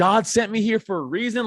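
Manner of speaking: mock fired-up, mildly heated half-shout. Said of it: "he was yelling".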